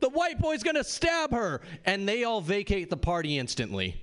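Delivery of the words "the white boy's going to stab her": very high, shrill, echoed group chorus scream. Retelling a party story, quoting her friends echoing: imitating friends echoing a scream. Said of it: "in an echo".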